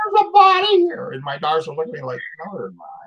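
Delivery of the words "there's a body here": very high, loud, sobbing, screaming wail. Retelling a lady who found a ground squirrel hole: imitating a screaming, crying woman. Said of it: "this lady's screaming, crying, and screaming".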